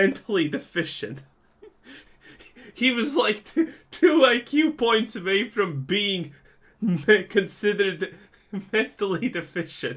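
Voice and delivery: high, loud giggling through the words.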